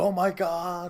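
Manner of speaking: loud, high-pitched, belted commentator-style delivery. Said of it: "Joey Styles would be like".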